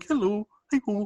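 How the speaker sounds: high-pitched puppet tone. Explaining the show's transitions, the co-host does a Kermit the Frog voice. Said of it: "and this is Kermit the Frog".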